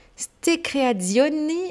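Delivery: Italian accent on whole line. Closing a segment by introducing the last item, in an Italian accent. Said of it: "j'ai sorti mon accent italien".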